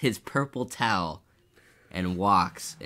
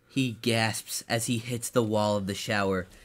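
usual speaking voice

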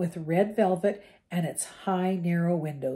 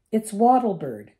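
raised, impatient, get-on-with-it tone; 3 semitones higher, 7 dB louder than usual. Narrator voicing a character answering after being interrupted: impatient. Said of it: "said Hermione impatiently".

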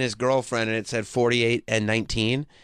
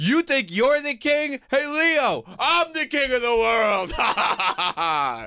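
play-acted boastful yell, very high, full-throated; 13 semitones higher than usual. Telling a story, act out Jack calling to Leo, imitating Jack yelling. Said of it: "He's just yelling".

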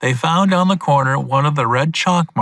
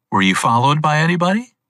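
usual speaking voice

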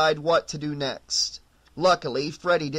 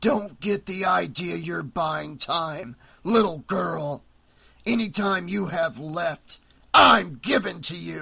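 snarled, snarling words. Freddy replies to Rachel, calling her little girl; snarling. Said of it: "Freddy snarled".

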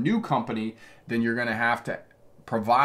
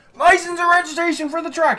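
very high, shrill, top-of-lungs scream; 8 dB louder than usual. Retelling what the officer screamed after being asked about a problem: retelling an officer's scream. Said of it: "He just like screamed".

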